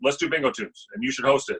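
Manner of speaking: dead-serious voice with swooping pitch. Retelling how a bar manager asked to start the show: Dan Cooper impression. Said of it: "that's my best Dan Cooper impression".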